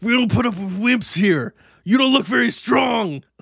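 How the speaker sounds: shouting. Acting out the coach shouting at a new camper: Coach Rex shouting. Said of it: "I'm the coach standing in the door".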